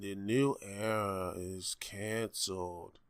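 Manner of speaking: very hushed, very slow, whiny monotone drone. Mocking how a character just sits there saying this, mock droning, boring voice. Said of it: "In this long, droning, boring voice".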